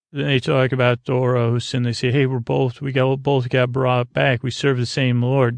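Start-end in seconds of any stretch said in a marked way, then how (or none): none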